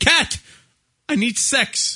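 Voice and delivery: put-on English accent, pitched very high. Acting out what he says to her, in an english accent. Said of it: "English accent that they do".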